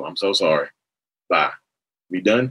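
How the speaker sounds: play-acted, backhanded, dismissive throwaway delivery, brushing it off. Acting out a narcissist's apology when the other is right: acting out a backhanded apology. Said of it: "You want me to apologize? Okay, cool".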